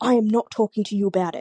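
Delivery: mock sharp, sudden, cutting snap. Speaker recalls how he snapped when a friend asked what was wrong: retelling a sharp, loud snap. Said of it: "he said it so sharply, so loud".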